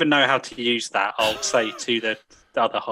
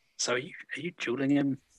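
quiet, hushed, low-key voice; 2 semitones higher, 7 dB quieter than usual. Asking a companion in character whether they are dueling: said quietly. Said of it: "I'm just gonna kind of say quietly".

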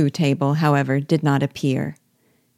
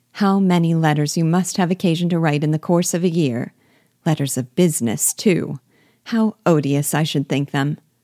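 ordinary delivery, nothing marked

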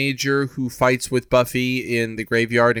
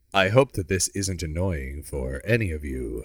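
fake smooth sultry baritone, lower and quieter; 7 semitones lower, 4 dB quieter than usual. Opening the episode, joking with a co-host: put-on sweet sultry baritone. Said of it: "in a sweet and sultry baritone".

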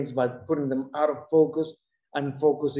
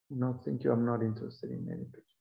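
mock very calm voice, much quieter; 3 semitones lower, 8 dB quieter than usual. Recounting what a woman said to you, quoting her very calmly. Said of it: "she says very calmly".

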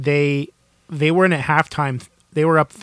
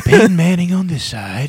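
sultry, raised, slightly louder voice; 3 semitones higher, 5 dB louder than usual. Explaining the matchup after being asked to speak slowly: Bob Ross voice. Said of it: "It's going Bob Ross on us".

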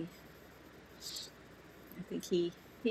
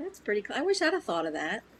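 ordinary talk

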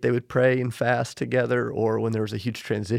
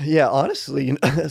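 cracking voice, higher and louder; 3 semitones higher, 5 dB louder than usual. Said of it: "sorry, my voice cracked".

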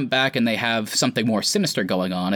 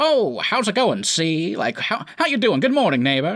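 classic put-on transatlantic accent, pitched up; 9 semitones higher than usual. Describing how Wanda usually talks, do it in Wanda's transatlantic accent. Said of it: "throws aside the transatlantic accent".

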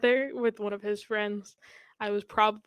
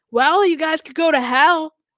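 very loud, high-pitched scream; 6 semitones higher, 9 dB louder than usual. Recounting a stranger yelling from an alleyway, retelling a stranger's scream. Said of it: "this guy from an alleyway screams".

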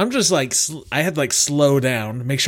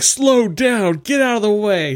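put-on high, drawn-out yell; 8 semitones higher, 4 dB louder than usual. Retelling how a man in a funeral car yelled at the driver: imitating someone yelling. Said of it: "yelling at me".

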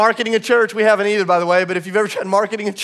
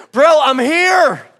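really loud, raised, pitched-up voice; 6 semitones higher, 5 dB louder than usual. Recounting an argument, quoting what the other man said back; retelling a loud reply. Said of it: "in a really loud voice".

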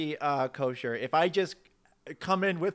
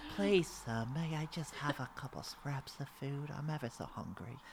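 very soft, hushed, low pleading voice; 4 semitones lower, 13 dB quieter than usual. Pitching a part in a film remake, a performer steps into a role: pleading street orphan voice. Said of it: "I see myself as a little just street orphan".

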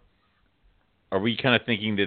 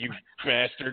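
usual speaking voice

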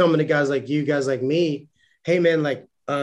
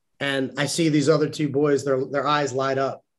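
plain

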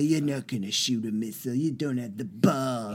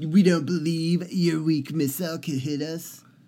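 put-on brash politician voice, higher pitch; 4 semitones higher than usual. Imagining the president answering a missile warning: Trump accent. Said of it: "Should I just talk in the Trump accent?".

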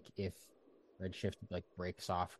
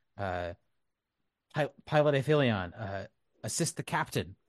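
cool, strained, exerted character voice; 3 semitones higher, 7 dB louder than usual. Speaking in character over the channel to the pilot: Redshift's cool but strained voice. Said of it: "in Redshift's cool but now somewhat sort of strained and exerted voice".

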